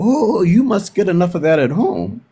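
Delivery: imitated thick German accent. Retelling what the lunch lady said in line: imitating a thick german accent. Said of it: "she had this thick German accent".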